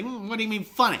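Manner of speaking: very high, wiseguy-style delivery. Quoting a scene from the movie Casino: Joe Pesci impression. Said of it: "I don't even know if that's a Joe Pesci impression".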